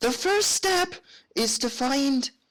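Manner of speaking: slow, very high yell. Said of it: "she gets even louder".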